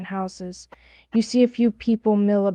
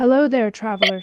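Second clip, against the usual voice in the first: ordinary talk, nothing marked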